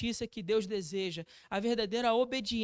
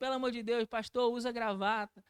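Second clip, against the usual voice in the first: usual speaking voice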